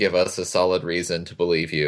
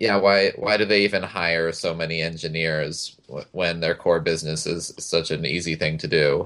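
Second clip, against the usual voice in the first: ordinary talk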